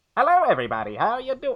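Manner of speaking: put-on very high, old-timey forties radio announcer voice. Trying out a forties radio voice, the speaker greets everybody: old-timey Bane voice. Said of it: "makes me sound like an old timey Bane".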